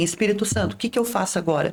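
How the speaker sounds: ordinary talk, nothing marked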